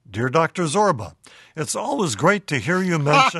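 ordinary talk

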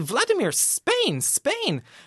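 very high, swooping, urgent anxious pleading tone. Recalling pointing south after an unexpected wrong turn, retelling an anxious plea.

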